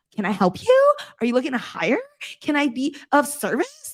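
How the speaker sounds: rising uptalk, every phrase ending on a lift. Contrasting with ending sentences on a downward note, demonstrate rising uptalk. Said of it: "more mature versus being like".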